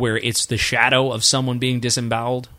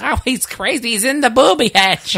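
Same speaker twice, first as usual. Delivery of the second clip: put-on very high-pitched, slight, old New York lilt; 12 semitones higher, 4 dB louder than usual. Quoting how their grandmother used to describe someone, imitating grandmother's New York accent. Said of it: "from New York with a little bit of an accent, so she'd go".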